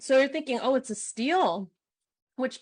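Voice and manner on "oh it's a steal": ordinary delivery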